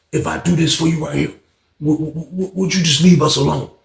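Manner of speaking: mock grave, serious, pained, stumbling on the word "would". Retelling what another man said to him, imitating a serious plea. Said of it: "Like he got real serious".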